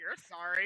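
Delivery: muttered under breath. Voicing a character replying to an apology: muttered under breath. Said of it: "Donnie under her breath just".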